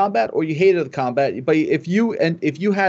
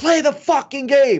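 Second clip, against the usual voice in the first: put-on slow, high-pitched scream stretched word by word; 8 semitones higher than usual. Retelling screaming at the players in the hallway: retelling a scream. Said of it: "I went to the hallway yesterday and I screamed".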